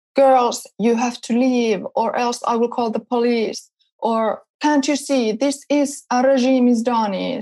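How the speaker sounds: mock shouting, toned down, mild and held back. Retelling how a factory guard yelled at the girls filming him, imitating him yelling. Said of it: "he was yelling".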